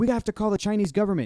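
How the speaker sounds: put-on slight Chinese accent. Retelling a scene, the speaker quotes a man's line in a slight Chinese accent. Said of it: "he said it with like that accent".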